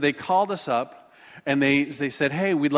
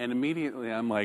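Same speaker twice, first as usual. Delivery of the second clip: usual speaking voice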